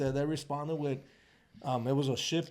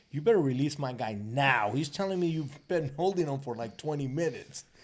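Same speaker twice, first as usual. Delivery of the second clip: plain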